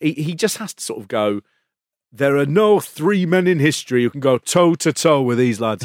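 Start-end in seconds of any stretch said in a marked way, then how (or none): 2.1-5.8 light put-on Yorkshire accent, raised voice. Retelling what he has to say, in a bit of a Yorkshire accent. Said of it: "He's a bit Yorkshire now".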